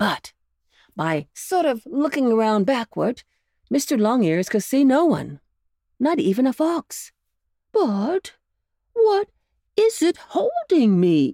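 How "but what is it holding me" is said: high, drawn-out cry of struggle. Narrator reads Mr. Longears, held and unable to get loose; crying out while struggling. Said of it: "He cried as he tried again and again to get loose".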